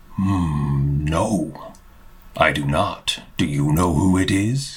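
grumbly voice. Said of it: "kind of just grumble".

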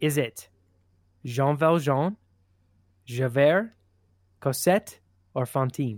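put-on French accent. Repeating quiz answer options when asked to: put-on french accent. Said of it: "Can you say them with a French accent".

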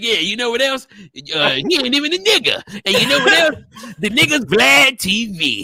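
gleeful, mocking, teasing delivery. Retelling what another speaker said while roasting: imitating a friend roasting. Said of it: "You was like".

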